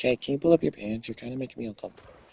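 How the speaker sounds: gentle, sweet, polite tone, acted. Retelling asking someone to pull up their pants: retelling own sweet, nice request. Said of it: "I say it so nicely".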